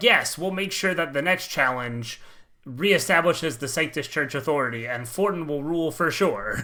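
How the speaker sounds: plain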